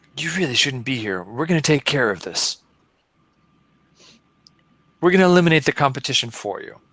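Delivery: put-on menacing, threatening whisper. Playing a character threatening a locked-down enemy: whispering menacingly in character. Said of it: "so I'm gonna whisper to this guy".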